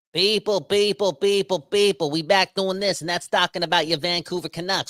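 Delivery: put-on New Jersey accent. Podcast host opening his daily canucks show, in a new jersey accent. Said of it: "Why am I talking in a New Jersey accent?".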